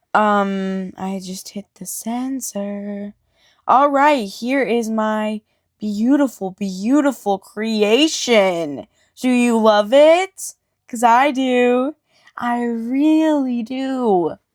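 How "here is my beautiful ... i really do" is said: dripping sarcasm with over-sold, fake-enthusiastic pride. Showing a failed clay creation to viewers: sarcastic fake enthusiasm. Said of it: "Obviously, I'm being sarcastic".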